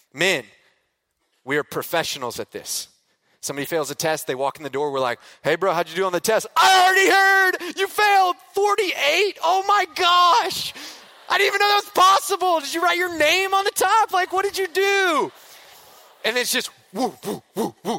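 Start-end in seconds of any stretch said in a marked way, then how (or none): 5.5-15.4 very high, loud, mocking, teasing sing-song. Acting out guys ridiculing a friend who failed a test: imitating a mocking taunt. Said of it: "We're just throwing them at each other".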